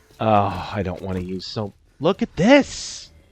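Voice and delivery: flustered, panicked blurt with rising, swooping pitch. Reacting to a mistake while playing a game: panicking. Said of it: "I'm totally gonna die because I'm panicking".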